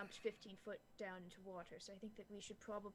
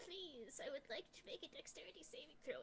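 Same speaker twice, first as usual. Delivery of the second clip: put-on goblin voice, higher; 7 semitones higher than usual. Asking the game master to make a saving throw: goblin voice. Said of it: "practicing her goblin voice".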